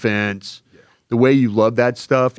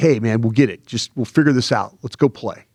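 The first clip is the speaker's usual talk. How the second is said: put-on calm, soothing voice. Retelling what Darren Woodson said to calm him down: imitating Darren Woodson's calming voice. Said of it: "He was like that calming kind of".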